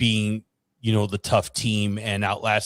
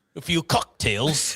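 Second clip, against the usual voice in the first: put-on British accent, higher; 6 semitones higher than usual. Repeating a phrase when asked about it: British accent. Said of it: "you were trying a British accent or something?".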